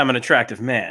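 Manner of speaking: normal talking voice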